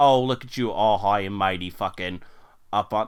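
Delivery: put-on Boston accent. Acting out a street-corner scene, one character speaks in a Boston accent. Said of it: "Now it's turning into a Boston accent".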